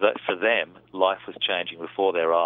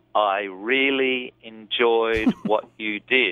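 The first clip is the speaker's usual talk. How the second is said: halting, broken, deliberate, careful speech; 4 semitones higher, 4 dB louder than usual. Retelling a party guest complimenting an actress, imitating a broken, considered voice. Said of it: "in this very broken, you know, considered voice".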